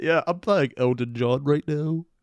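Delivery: put-on British accent. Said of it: "as close to a [name] accent as I can get".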